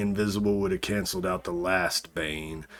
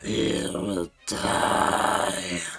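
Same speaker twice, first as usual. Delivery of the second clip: inhuman, monstrous demonic voice. Narrating a scene, the speaker voices a figure whose voice turns monstrous. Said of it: "this monstrous voice comes through".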